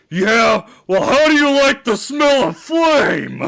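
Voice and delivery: furious outburst, very high and very loud. Trying the Bee Movie character's angry line: imitating Patrick Warburton's angry Bee Movie character. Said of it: "I've tried to do his character from Bee Movie".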